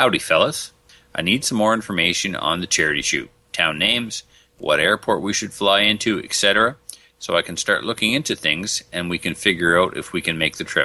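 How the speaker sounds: ordinary delivery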